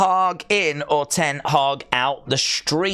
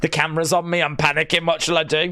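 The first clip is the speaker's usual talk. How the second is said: usual speaking voice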